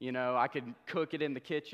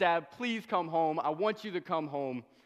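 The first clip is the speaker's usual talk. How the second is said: tearful, crying, begging voice; 4 semitones higher than usual. Retelling a phone call to dad about a strange sound, retelling a tearful plea. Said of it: "I'm crying to my dad. I'm saying".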